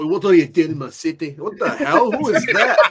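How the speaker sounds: thick, laid-on Irish accent. Riffing on an Irish Peter Parker, speaker does a thick Irish accent. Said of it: "Like a real talk Irish Peter Parker".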